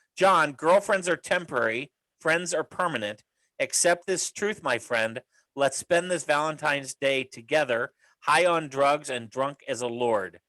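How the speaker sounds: ordinary delivery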